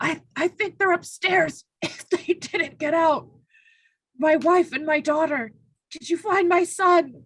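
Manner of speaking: shocked, stunned, halting and stammering delivery. Voicing a rescued man shocked at being grabbed: shocked. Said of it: "looks at you shocked and goes".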